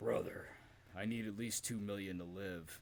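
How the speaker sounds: mock mournful, downcast, soft, sad voice. Retelling a backstage story, quoting Hulk Hogan: imitating Hulk Hogan sounding sad. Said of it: "Hogan's just looking kinda sad and grizzled".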